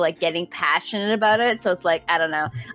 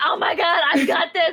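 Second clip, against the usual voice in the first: put-on very high, intense, triumphant, excited yelling; 10 semitones higher than usual. Retelling own excitement during the second match: retelling own past yelling. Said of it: "I was, like, yelling".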